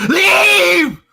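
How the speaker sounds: very high, very loud, shrill, full-throated yell. Narrating a story, a character yells as a creature grabs her, yelling. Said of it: "And she yells".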